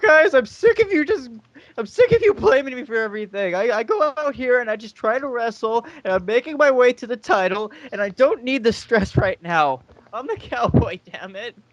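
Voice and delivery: very high rant, on the verge of tears. Retelling what a wrestler said to the guys, imitating someone near tears. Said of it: "did he sound like he was gonna cry?".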